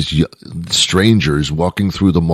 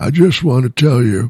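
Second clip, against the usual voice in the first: put-on elderly man voice, pitched up; 7 semitones higher than usual. Picturing an elderly man stopping a young woman at the mall: elderly man voice. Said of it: "this is my elderly man voice".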